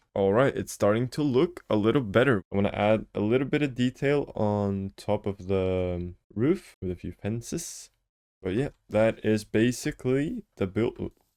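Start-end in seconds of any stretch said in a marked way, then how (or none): 8.9-11.1 voice breaking and cracking on the words. Wrapping up a build in a video: voice crack. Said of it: "voice crack".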